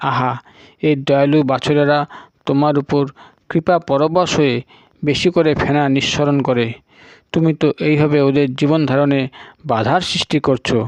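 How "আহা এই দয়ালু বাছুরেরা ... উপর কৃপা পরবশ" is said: ordinary delivery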